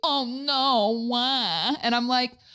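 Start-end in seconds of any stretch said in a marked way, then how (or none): 0.0-1.1 dry, mocking sarcasm, "no" drawn out. Retelling someone's reply to the speaker's news, in a mock-sarcastic oh no.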